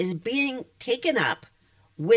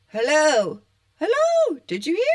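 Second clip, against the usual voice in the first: high, loud calling out; 5 semitones higher than usual. Speaker calls out a greeting while the dog looks on: yelling. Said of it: "She's wondering why I'm yelling".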